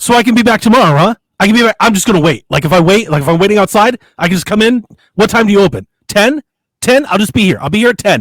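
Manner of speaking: acted eager, animated, rambling nonstop talk. Retelling what an animated customer kept saying at the store: imitating an animated customer. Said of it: "I'm gonna do my best impression".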